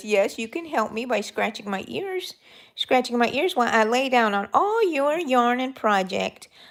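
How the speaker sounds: acted pet dog voice. Voicing the pet dog, who wants her ears scratched: voicing her dog. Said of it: "she says".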